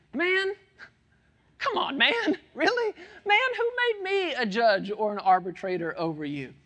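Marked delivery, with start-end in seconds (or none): 0.1-4.3 put-on, drawn-out, exasperated, incredulous, pitch swooping up. Reading a Bible verse aloud, voicing Jesus: incredulous, exasperated Jesus. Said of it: "you can almost hear it in his voice".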